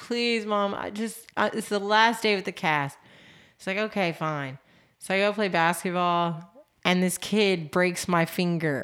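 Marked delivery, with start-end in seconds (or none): 0.0-3.0 mock pleading tone. Retelling how she begged her mom on her last day in the cast, retelling a begging plea. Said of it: "I begged my mom".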